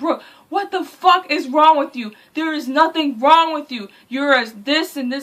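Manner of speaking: high, in-your-face scream, yelled right up close. Retelling how a man in therapy yelled at her: imitating someone screaming. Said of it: "He yelled in my face and screamed like".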